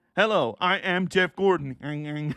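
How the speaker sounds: put-on puppet character voice. Joking about a Thunderbirds-style puppet entrance: Jeff Gordon as a Thunderbirds puppet. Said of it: "with the Jeff Gordon, Jerry Anderson puppet".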